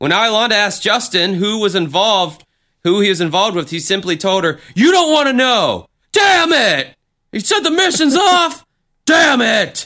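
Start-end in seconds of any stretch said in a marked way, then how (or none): 4.7-9.9 play-acted, very high, furious, angry yelling outbursts. A narrator retells Justin answering Iolanda's question, imitating Justin's angry shouting. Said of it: "storming through the apartment shouting".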